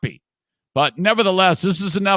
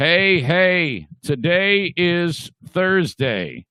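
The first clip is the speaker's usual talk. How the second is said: very slow, deliberate, drawn-out chat-line voice, word by word. Reading out a chat viewer's messages: imitating Kenny. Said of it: "This is my impression of Kenny".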